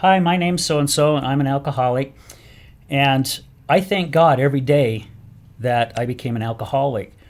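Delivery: plain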